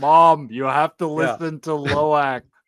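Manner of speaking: unnaturally deep, slow, loud speaking voice. Retelling a movie scene where a son tells his mom to listen: imitating a weirdly deep voice. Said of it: "he has a weirdly deep voice".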